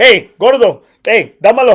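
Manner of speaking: loud, slow, drawn-out holler. Retelling how Victor Trevino ran up a bar tab: imitating Victor Trevino. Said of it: "he's like".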